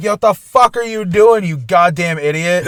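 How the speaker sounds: mock, heated, fuming, angry outburst going off. Retelling yelling at another driver from the car: retelling an angry yell. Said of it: "I'm going off, like".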